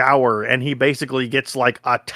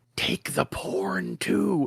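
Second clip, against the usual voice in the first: very slow, drawn-out, hushed whisper; 6 semitones higher, 8 dB quieter than usual. Retelling a scene where the mom speaks to him: imitating a whisper. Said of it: "whispers to him".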